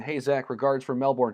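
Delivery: ordinary talk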